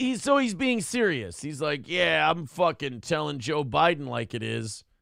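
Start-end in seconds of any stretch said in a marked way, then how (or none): none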